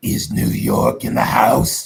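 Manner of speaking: hollow, demonic, loud, slow, rough empty-suit voice. Retelling what a man said to a cheering crowd, in a demonic empty-suit voice. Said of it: "Let me get into character. Demonic empty suit".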